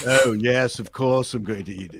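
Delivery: mock patronizing, derisive tone. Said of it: "everything I say sounds derisive and patronizing".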